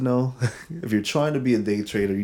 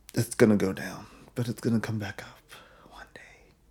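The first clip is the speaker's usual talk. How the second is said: hushed, soft whisper; 4 dB quieter than usual. Speaker talks to listeners about investing; whispering. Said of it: "Don't know why I'm whispering now".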